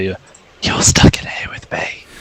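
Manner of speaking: slow, drawn-out whisper, each word spaced out. Whispering in character to a creature in magical darkness: whisper. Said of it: "but I'm gonna whisper".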